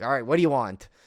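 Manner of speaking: mock rude, unwelcoming, loud, surly delivery. Retelling how a comic book store owner greeted customers: imitating a surly shopkeeper. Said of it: "totally surly".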